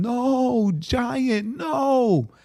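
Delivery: put-on very high, wailing, bawling child's scream. Retelling a son running in bawling and screaming at the screen: imitating a child screaming. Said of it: "he's screaming".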